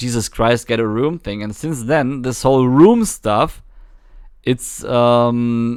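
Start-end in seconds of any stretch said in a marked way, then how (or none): none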